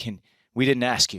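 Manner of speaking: mock panicked, freaked-out voice. Retelling what a panicked man asked him, imitating someone freaking out. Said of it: "he's freaking out".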